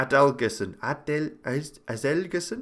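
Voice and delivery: accent from Iceland. Calling a match, the speaker tries a player's name in a bit of an Icelandic accent. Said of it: "trying to do it in a bit of a Icelandic accent".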